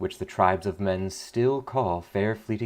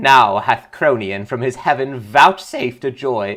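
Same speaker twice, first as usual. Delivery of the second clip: very loud voice cracking into a cry; 3 semitones higher, 9 dB louder than usual. Reader voicing a voice that cries out amid a crowd, in a cracking voice. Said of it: "I don't like the crack voice guy".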